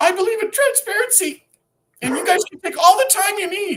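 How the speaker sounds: flustered, shrill, loud, very high voice. Speaker mocking a red-faced opponent speaking in court, imitating a flustered speaker. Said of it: "She is flustered".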